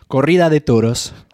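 Spanish accent on corrida de toros. Explaining bullfighting to the other speaker, saying its spanish name in a spanish accent. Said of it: "that accent".

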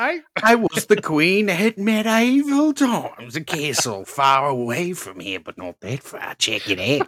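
put-on Australian accent, high and swooping. A player improvising a scene with friends switches accents, into an Australian accent. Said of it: "Now you're Australian".

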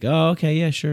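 politely accommodating, easygoing tone. Showing how you answer someone who borrowed your book, in a nice, polite tone. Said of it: "You say it nice".

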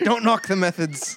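bad put-on Irish accent, high pitch.

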